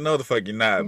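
ordinary delivery

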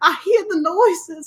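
very high, put-on, fearful Southern drawl. Repeating the other speaker's ghost-noise line, mock-scared Southern drawl. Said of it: "Southern drawl randomly comes with fear".

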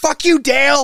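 very loud, very high, shrill screamed yell. Describing a scene where a man smashes on the drums: retelling a yell. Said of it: "he yells at the symbol he goes".

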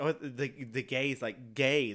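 ordinary talk

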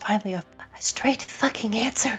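muttering under breath. Voicing a character's reply to a guardian's answer: muttered under her breath. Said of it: "under her breath".

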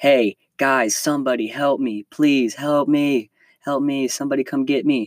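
mock frantic, freaked-out, panicked pleading yell. Caught by waves, retelling yelling to friends on shore, retelling panicked yelling for help. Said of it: "I start yelling for my friends".

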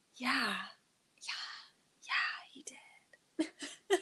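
very slow, drawn-out, breathy near-whisper. Retelling how a woman on the show answered: imitating a breathy voice. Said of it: "She's more breathy".

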